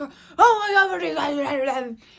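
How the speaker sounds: very loud, alarmed, panicked yelling. The speaker recounts being badly hurt and mom panicking, imitating mom yelling. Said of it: "She was she started yelling like".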